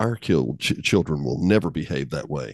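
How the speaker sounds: put-on, sure-of-himself, smug, self-satisfied tone. Retelling a remark made to a wife about other people's kids: imitating a smug remark. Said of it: "he smugly turned to Janet".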